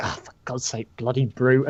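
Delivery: cursing mutter, quietly under the breath. In a role-play scene, Ellis looks at Rook, Ellis cursing under her breath. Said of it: "curses under her breath".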